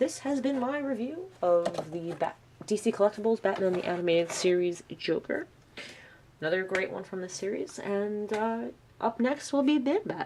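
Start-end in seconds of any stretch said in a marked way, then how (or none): 9.0-10.3 voice jumps suddenly high in pitch. Ending a toy review, announcing the next one: voice jumping up in pitch. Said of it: "that sounded weird because my voice went up like this".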